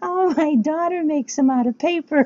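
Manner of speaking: odd, weird, squeaky put-on voice, very high. Retelling what the speaker's mother told her doctor: weird voice for her mother. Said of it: "I make my mother have a weird voice".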